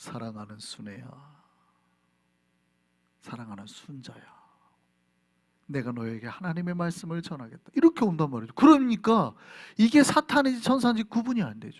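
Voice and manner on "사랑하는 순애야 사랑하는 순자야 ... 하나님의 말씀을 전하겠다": lovely voice, very low and very soft. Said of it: "그 목소리가 좋아요".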